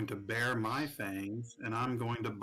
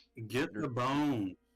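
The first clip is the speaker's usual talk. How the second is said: blurted, called out out of turn. Calling out of turn to another player: yelling as loud as possible. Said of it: "I'm just yelling as loud as I can".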